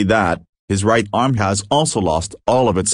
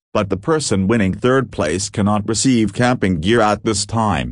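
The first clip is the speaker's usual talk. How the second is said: plain reading voice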